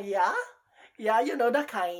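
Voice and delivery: put-on Hawaiian pidgin accent. Joking that a Hawaiian accent is gone, showing it: put-on Hawaiian accent. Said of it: "parang nawawala na yung Hawaiian accent mo".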